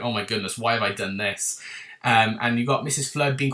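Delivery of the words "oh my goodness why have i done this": put-on shocked voice. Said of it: "almost like a shock".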